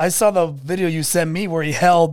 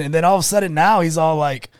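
ordinary talk

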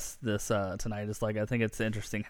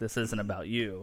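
usual speaking voice

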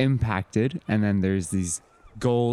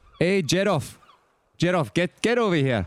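put-on Scottish accent, higher and slower; 9 semitones higher than usual. Voicing a character calling one of his gnomes over, in a Scottish accent. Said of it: "I got to get to my Scottish accent".

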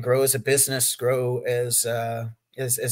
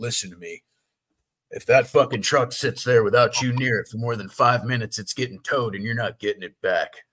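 grave, dead-serious, stern put-on tone; 3 dB louder than usual. Retelling a guy's warning while dropping off packages: imitating a serious warning. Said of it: "this guy was so serious".

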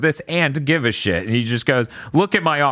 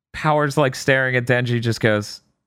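plain

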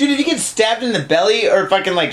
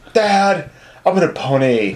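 put-on teen girl voice, low, very slow, drawn-out; 4 semitones lower than usual. Speculating about a story, the speaker voices a girl asking her dad, imitating a 14-year-old girl. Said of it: "Do this voice one more time".

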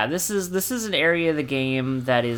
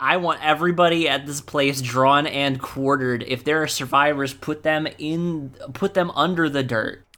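normal talking voice

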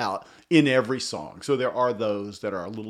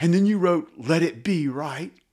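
put-on jittery interviewer voice, higher and faster; 7 semitones higher, 4 dB louder than usual. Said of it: "awkward spastic".

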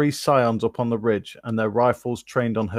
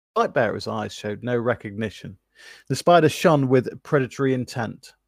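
plain reading voice

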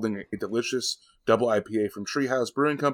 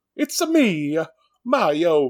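put-on Italian accent, pitched up high; 6 semitones higher than usual. Speaker admits their Jamaican accent came out differently, then does a Mario impression. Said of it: "or more like Mario".

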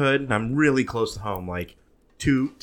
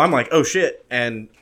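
ordinary talk, nothing marked

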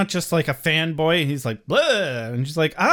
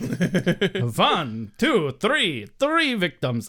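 put-on vampire voice, much slower. Recapping an episode, quoting Xander's counting: the Count voice. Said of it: "when Xander quoted the count".

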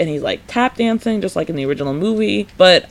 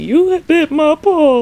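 very high, stretched, drawn-out shriek; 9 semitones higher, 4 dB louder than usual. Retelling a scene, acting out the lion bitten by Toto, retelling a scream. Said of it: "He starts screaming".

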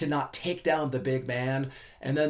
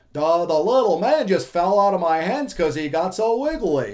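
loud, dopey, dim-witted cartoon voice; 4 semitones higher, 8 dB louder than usual. Imagining a wrestler's defense, the speaker voices it aloud: cartoon moron voice. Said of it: "I hear that in like a cartoon moron voice".

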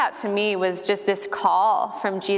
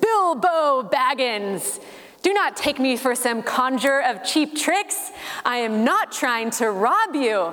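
ominous, imposing, big wizard-like voice; 4 semitones higher than usual. Retelling a scene where Gandalf confronts Bilbo, booming Gandalf voice. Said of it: "he has this booming voice and says".

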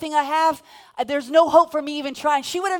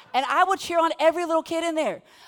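ordinary talk

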